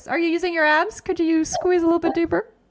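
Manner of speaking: frightening instructor-style voice. Pilates instructor showing how she cues her class, in her Pilates instructor voice. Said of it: "Maybe that was my instructor voice".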